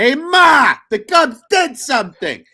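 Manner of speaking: put-on, very high, loud New York accent. Reading a viewer's comment aloud, the host delivers it in a New York accent. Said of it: "the comments says in a New York accent".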